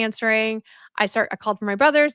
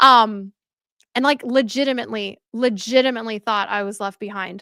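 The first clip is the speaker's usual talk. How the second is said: plain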